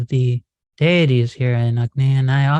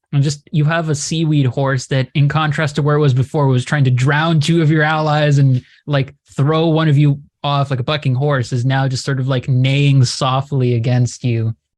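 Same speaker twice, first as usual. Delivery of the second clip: usual speaking voice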